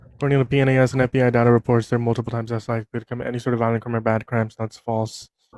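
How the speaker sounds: rattled off really fast, rapid-fire and rushed. Rebutting the other speaker in a debate, talking really fast. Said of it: "you're just gonna like talk really fast".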